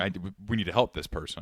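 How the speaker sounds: plain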